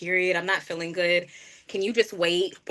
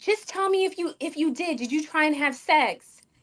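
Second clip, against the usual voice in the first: pitched-up, demanding yell; 9 semitones higher than usual. Retelling her mom questioning her, the speaker quotes her: imitating mom yelling. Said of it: "And she's yelling at me".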